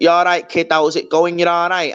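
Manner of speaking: put-on broad old-school Manchester accent. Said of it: "sort of Oasis style accent".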